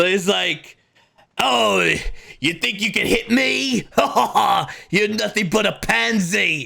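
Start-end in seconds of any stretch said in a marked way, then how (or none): 1.4-6.7 jeering, mocking, high, creaky, rasping, pitched-up voice. Voicing a Nosferatu taunting a player in a fight: voice like Archibald. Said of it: "he sounds like Archibald".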